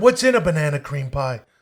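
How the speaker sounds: plain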